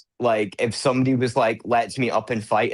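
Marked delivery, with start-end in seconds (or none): none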